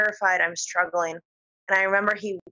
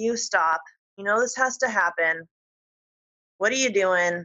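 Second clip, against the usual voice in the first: mock coolly composed, very calm otherworldly alien voice. Retelling what a gray alien said during sleep paralysis: imitating a calm alien. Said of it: "he was just very calmly like".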